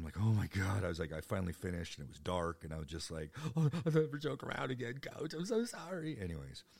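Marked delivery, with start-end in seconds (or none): 3.6-6.2 mock very high-pitched, blubbering, tearful sobbing voice. Retelling a tearful apology to a coach in 10th grade: imitating past self crying. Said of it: "and I'm crying".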